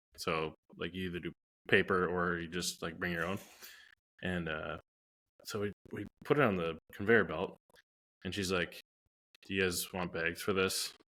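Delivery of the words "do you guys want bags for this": super monotone, dead-flat, no inflection at all. Retelling what the checkout worker said, imitating super monotone delivery. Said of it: "Like just super monotone".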